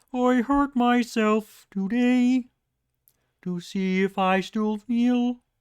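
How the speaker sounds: put-on voice, very high and slow. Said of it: "finding the Kermit voice when I try to do it".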